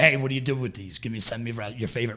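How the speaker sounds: put-on heavy, mocking sarcasm. Retelling a Facebook post asking people for help: retelling a sarcastic request.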